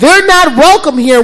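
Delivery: very loud, high, bullhorn-style rally-leader yell. Retelling a protest: a woman on a bullhorn, imitating her yelling. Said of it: "she's yelling".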